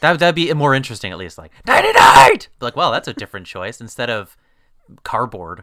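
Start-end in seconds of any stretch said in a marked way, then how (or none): 1.7-2.5 very loud, high-pitched scream. Suggesting a film line would be more interesting if screamed: screamed. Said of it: "he might as well have screamed it".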